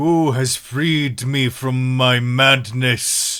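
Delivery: slow, thunderous, booming giant voice. Voicing a freed giant speaking to the party: booming giant voice. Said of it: "You hear this booming voice".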